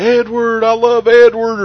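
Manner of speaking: drawn-out scream, very high and very loud. Retelling what they screamed from a passing car in a YouTube video, retelling a scream. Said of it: "I'm screaming like".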